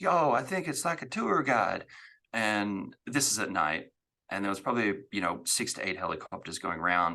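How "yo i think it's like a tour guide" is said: put-on very strong Southern accent, pitched up. Retelling what a visitor overheard at night said: imitating a very southern accent. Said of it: "it was a very Southern accent".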